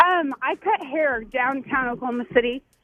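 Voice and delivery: plain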